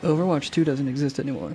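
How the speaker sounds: usual speaking voice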